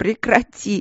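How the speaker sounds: high sob breaking into laughter. Reading Vicky's reply to the mage's comically serious remark; sobbing and laughing. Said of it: "всхлипнула она и засмеялась".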